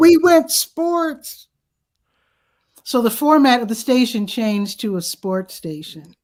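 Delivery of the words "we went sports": mock crying, higher pitch. Retelling what the crying guy said on the phone: imitating someone crying. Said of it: "I can tell he's, like, crying".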